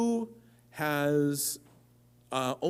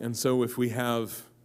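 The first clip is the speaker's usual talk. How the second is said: ordinary delivery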